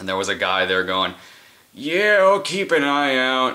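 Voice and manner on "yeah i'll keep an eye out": put-on slow, drawled, pitched-up old man voice. Quoting a man he met while putting up flyers, sounding like Lloyd. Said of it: "I don't know why I sounded like you just then".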